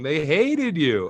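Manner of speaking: high voice, words broken up by laughter. Retelling what mom kept saying after the speaker's performance, imitating mom laughing while talking. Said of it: "She just kept laughing and saying".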